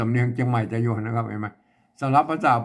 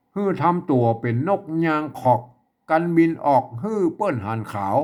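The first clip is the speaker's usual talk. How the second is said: Tai Yuan Chiang Mai northern Thai dialect; 4 semitones higher than usual. Speaker reading a text aloud today in a Chiang Mai northern Thai accent. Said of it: "วันนี้จะอ่านแบบสำเนียงเชียงใหม่ไต้หวน".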